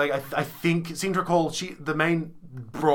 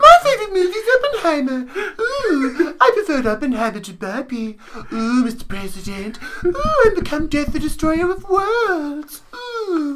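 very high, dumb, ditzy bimbo voice; 12 semitones higher than usual. Speaker doing a character bit: dumb bimbo voice. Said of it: "the dumb bimbo voice".

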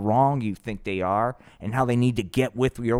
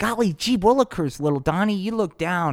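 put-on high, pitched-up kids' puppet-show voice; 8 semitones higher than usual. Retelling a puppet show scene as Little Joey: Little Joey puppet voice. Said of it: "Little Joey is like".

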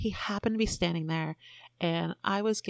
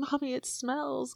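high, complaining voice, words choked out between gags; 7 semitones higher than usual. Recounting what Charlie said about a bad smell, imitating someone gagging.

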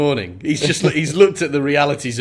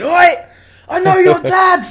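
mock, shrill, high-pitched, loud, angry dinosaur bellow; 7 dB louder than usual. Describing a dinosaur scene, the speaker voices the T-Rex, imitating its angry bellow. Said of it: "in his angered bellow going".

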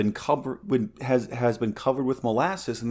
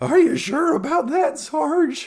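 very high, squeaky, cracking adolescent voice; 4 dB louder than usual. Trying a cracking adolescent voice asking the sergeant: Simpsons adolescent voice breaking. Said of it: "Simpsons adolescent ... voice breaking all the time".

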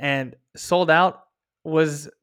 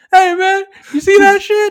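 shrill, very loud, high-pitched yell; 10 dB louder than usual. Retelling a guy in the back of the theater calling over, imitating someone yelling. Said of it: "He's like yelling all the way across the theater".

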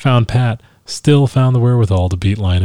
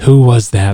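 words forced through clenched, gritted teeth; 2 semitones higher, 4 dB louder than usual. Narrator voicing a woman who was just shushed from behind, through clenched teeth. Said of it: "she said through clenched teeth".

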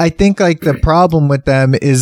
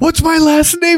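put-on panicked voice, higher-pitched. Quoting a movie character who is freaking out: imitating Sam Rockwell's character freaking out. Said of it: "freaking out".

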